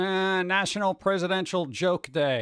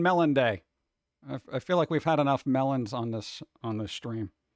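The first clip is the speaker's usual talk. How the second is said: ordinary delivery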